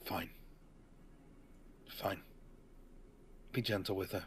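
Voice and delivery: breathy mutter forced through clenched teeth. A character gives a grudging reply as they shift seats, through gritted teeth. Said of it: "You see him like through gritted teeth".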